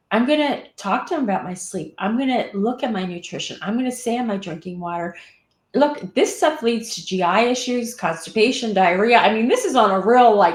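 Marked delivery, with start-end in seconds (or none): none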